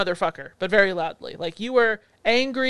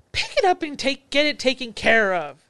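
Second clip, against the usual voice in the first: acted, slow, fed-up, exasperated nagging scold; 3 semitones higher than usual. Imitating the man present telling the speaker what to do, mock scolding. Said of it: "why are you procrastinating, you lunatic voice".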